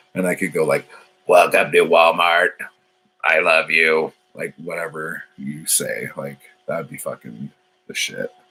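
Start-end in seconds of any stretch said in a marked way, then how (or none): 1.3-4.2 robotic voice-box voice. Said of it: "robot voice box things".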